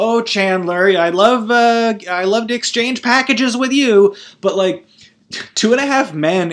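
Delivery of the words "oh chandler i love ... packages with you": put-on demure, chaste, prim, pitched-up prudish tone. Mocking sitcom characters exchanging christmas gifts: imitating prudish, chaste talk. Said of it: "how chaste and, and prudish they'd be like".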